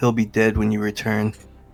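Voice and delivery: whispering. Playing a character, whispering to another character from a distance. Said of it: "You'll just hear a whisper".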